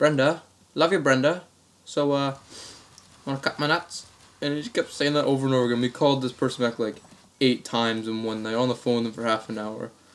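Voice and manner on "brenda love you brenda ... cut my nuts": put-on Australian accent. Retelling a prank call, a caller repeating this line in an australian accent. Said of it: "with the same Australian accent".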